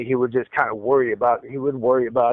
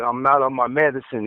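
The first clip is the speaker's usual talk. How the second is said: ordinary talk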